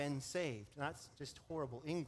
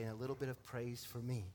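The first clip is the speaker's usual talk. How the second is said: quick, faster whisper; 3 semitones lower than usual. Speaker acts out what people say aloud, then adds one more line in a whisper. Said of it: "And then in a whisper".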